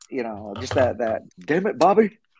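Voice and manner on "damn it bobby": very high-pitched cartoon dad outburst. Naming a favourite animated character and quoting his catchphrase: Hank Hill voice. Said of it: "that voice that everyone, like, will mimic".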